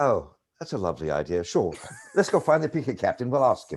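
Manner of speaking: put-on English accent. Retelling how their mother answered a request to join the picket line, english accent. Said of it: "with her English accent".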